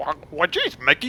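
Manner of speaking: loud, high-pitched goofy cartoon voice. Trying out voices to practice: Goofy voice. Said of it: "I somewhat can do a goofy voice".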